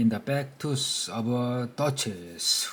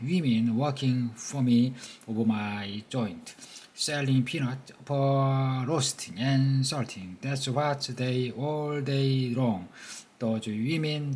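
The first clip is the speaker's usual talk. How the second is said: plain reading voice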